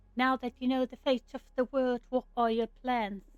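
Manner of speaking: put-on English accent. Voicing a character asking another about plans, in an english accent. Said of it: "I'm switching these uh, British accents".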